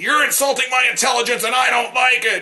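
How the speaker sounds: very high-pitched irate tirade. Retelling what an angry man said while jumping in his face: imitating an irate man. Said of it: "that just made him even more irate".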